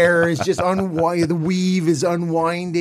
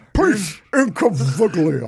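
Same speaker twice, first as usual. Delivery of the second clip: put-on slurred announcer voice. Showing a go-to impression: Harry Caray impression. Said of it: "That's my go-to Harry Caray".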